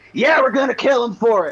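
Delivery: loud, high, hostile, pissed-off angry shout. Voicing a gang member whose face drops as he gets pissed: angry shout, NPC turning hostile. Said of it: "face drops, gets pissed, and he says".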